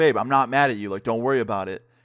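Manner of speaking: put-on heated bassy voice. Retelling a streamer answering the speaker's friend as they start arguing on stream, imitating a heated, bassy voice. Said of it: "some bass in her voice".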